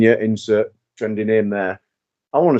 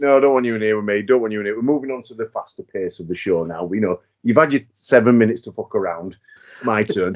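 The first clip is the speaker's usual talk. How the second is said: normal talking voice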